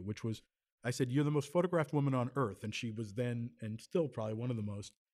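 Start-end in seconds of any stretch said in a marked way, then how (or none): none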